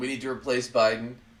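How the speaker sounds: ordinary delivery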